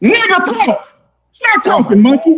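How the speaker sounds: slow, drawn-out, high-pitched yelling. Cutting off another speaker in a heated argument: shouting. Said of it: "why you shouting?".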